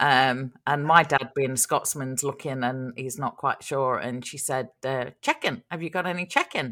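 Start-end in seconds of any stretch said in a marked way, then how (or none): 5.2-6.7 put-on New Zealand accent. Retelling what a check-in desk lady said: imitating a kiwi accent. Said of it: "because the Kiwi accent".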